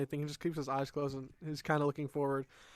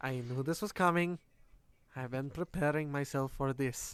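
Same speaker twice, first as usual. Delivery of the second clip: quiet put-on male mumble under breath. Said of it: "continue to mumble under your breath".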